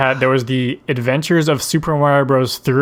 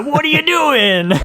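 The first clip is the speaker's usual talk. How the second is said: put-on very high, gruff Italian accent; 13 semitones higher than usual. Retelling how the characters talked in the episode: gruff stereotypical Italian Mario voice. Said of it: "gruff, middle-aged, stereotypical Italian voices".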